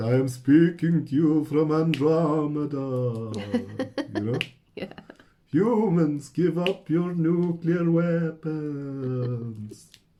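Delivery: very slow put-on vampire drawl, weapons stretched out. Describing how old spirit recordings sound, the speaker mimics one in a vampire voice. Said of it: "you put on the vampire voice".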